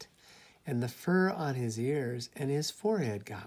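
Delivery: plain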